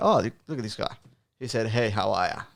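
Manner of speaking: ordinary delivery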